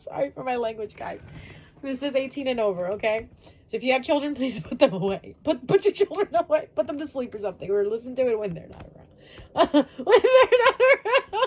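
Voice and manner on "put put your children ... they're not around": high, loud talking through hard laughter. Speaking to the audience, laughing while talking. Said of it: "Sorry, I'm just laughing. I'm laughing too hard".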